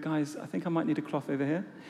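quiet calm voice. After hot coffee spilled on their lap, retelling a quiet, calm remark. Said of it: "very quietly and calmly said".

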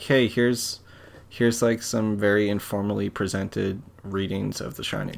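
ordinary delivery

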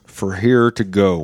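very slow, teeth-gritted, through clenched teeth. Retelling what she asked him after he ordered, imitating talking through clenched teeth. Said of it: "And she went with clenched teeth".

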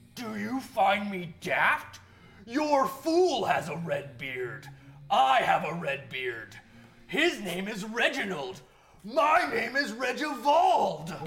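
very loud growl, pushed up high in pitch. A player's character confronts a ringleader during the game; growling. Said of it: "in a growl".

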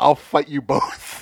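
slow, high, loud, drawn-out yelling. Retelling what the listener yelled on the street: imitating someone yelling. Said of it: "started yelling".

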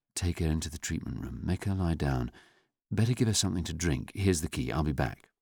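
usual speaking voice

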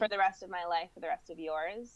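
ordinary talk, nothing marked

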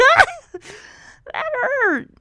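high, pained scream, yelping in pain. When she pulls the needle out, the speaker acts out his reply, retelling a scream of pain. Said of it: "he screams like".

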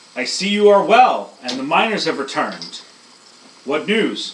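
very loud, booming bellow that echoes. Game master speaking as the arch-chaplain, in a bellowing, echoing voice. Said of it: "speaks in a bellowing voice that echoes".

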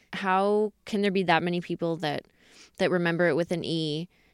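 ordinary talk

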